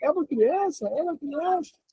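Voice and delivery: put-on woman's slow, drawn-out yell, very high. Imitating a woman at the side who shouts: imitating a woman shouting. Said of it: "uma mulher do lado gritando assim".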